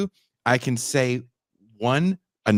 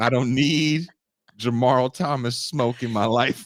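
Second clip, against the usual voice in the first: normal talking voice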